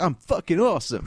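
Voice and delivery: mock brash, high, loud, cocky bragging tone.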